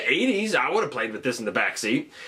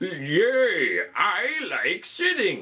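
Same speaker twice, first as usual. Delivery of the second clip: put-on very slow old man voice, "yay" stretched out; 4 semitones higher than usual. The speaker voices what he might say as he sits down: old man voice. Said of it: "I don't know why he's talking like an old man".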